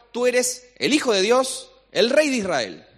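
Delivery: high, slow exclaimed voice.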